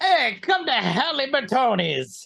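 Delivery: put-on terrible Italian accent. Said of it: "we got the terrible Italian accents".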